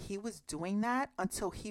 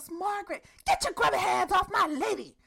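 put-on very high-pitched, shrill shout; 11 semitones higher, 6 dB louder than usual. Retelling how a man yells as a woman is pushed past in handcuffs: imitating someone yelling. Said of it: "And he yells".

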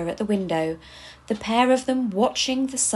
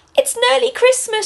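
very high, loud, thrilled, excited exclamation; 13 semitones higher, 8 dB louder than usual. Reading one elf answering another elf: excited exclamation. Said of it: "she exclaimed, clapping excitedly".

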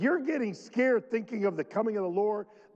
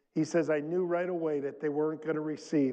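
ordinary delivery

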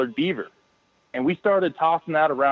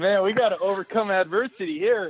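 play-acted, pitched-up talking through the giggles; 6 semitones higher than usual. Retelling a slow fishing day, acting out laughing while speaking. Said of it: "just looking at each other laughing".

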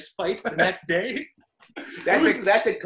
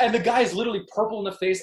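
plain

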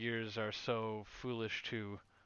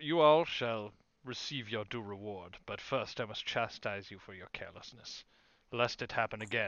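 grunting character voice. Voicing the half-elf archmagister addressing the group; grunting half-elf archmagister. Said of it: "He grunts and says".

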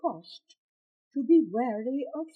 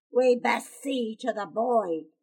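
slow, rough, gravelly growling voice; 2 semitones lower than usual. A man turns back, drawing his knife again, in a rough, gravelly growl. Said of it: "he growled in a rough, gravelly voice".

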